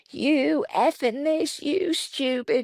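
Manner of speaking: very high, shrill, drawn-out scream. Retelling an assistant's road rage at passing drivers: imitating someone screaming at drivers. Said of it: "She literally was screaming at everybody driving by".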